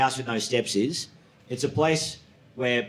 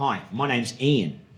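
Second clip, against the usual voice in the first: put-on Australian accent. Retelling a coworker's introduction: imitating Ian's Australian accent. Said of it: "In an Australian accent".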